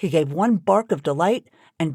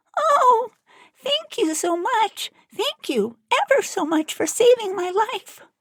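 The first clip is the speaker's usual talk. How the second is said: tiny, very high, squeaky little mouse voice. Narrator voicing the freed field mouse speaking to the Woodman, squeaky voice. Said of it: "in a squeaky voice".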